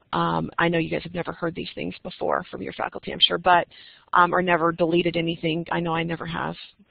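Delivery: ordinary talk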